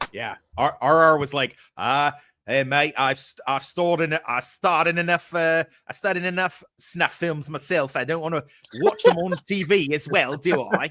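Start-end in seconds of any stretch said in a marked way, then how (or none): 1.8-10.9 stumbling, bad New Zealand accent. Imitating a friend's reply in a terrible New Zealander accent. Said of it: "That was a terrible New Zealander accent".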